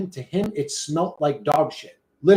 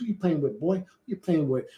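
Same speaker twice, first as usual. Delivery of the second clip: soft, needling, teasing trash talk; 5 dB quieter than usual. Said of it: "I be eating up my boy John".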